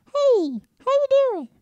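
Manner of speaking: very high, loud, nasally character voice. Explaining how they switch between character voices, demonstrating a high-pitched nasal voice. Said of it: "a high pitched like nasally voice".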